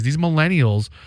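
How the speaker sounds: ordinary talk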